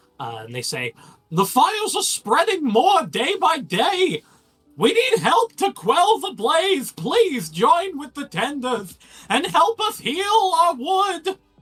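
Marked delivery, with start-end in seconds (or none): 1.3-11.4 put-on old character voice. Voicing a frail young figure on a crate calling to passing crowds: Mad Hatter-like voice. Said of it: "What does that voice remind me of?".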